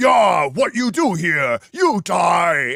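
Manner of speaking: loud, very slow, threatening ogre voice. Speaker describes a dull ogre encounter and voices the ogre, in an ogre voice. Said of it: "the ogre goes".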